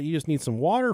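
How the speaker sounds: ordinary delivery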